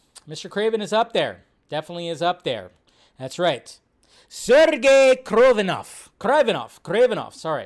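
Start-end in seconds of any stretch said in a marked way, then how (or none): 4.2-7.3 loud, clumsy, fake Russian accent. Pronouncing a Spider-Man villain's name, in a bad Russian accent. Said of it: "I got to work on my Russian accent".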